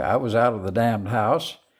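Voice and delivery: ordinary talk, nothing marked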